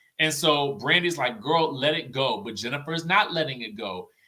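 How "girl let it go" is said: ordinary delivery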